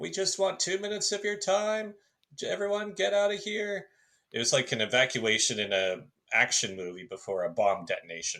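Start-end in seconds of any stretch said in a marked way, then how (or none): 0.0-3.9 mock very high, shrill, high-pitched yelling. Speaker recounts people yelling at locals to get out, imitating them yelling. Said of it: "them just yelling at the locals".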